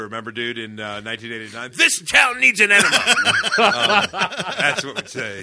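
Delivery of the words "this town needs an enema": loud, high, cackling put-on voice. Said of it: "Jack Nicholson's version of the Joker".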